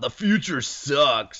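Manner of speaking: put-on slow, laid-back surfer dude accent. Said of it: "Let's give him a surfer dude accent".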